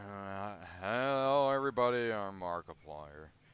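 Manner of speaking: put-on very low, slow, mopey, downcast mumble. Mocking how he greets everybody, speaker does a sad Markiplier impression. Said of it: "He's just sad".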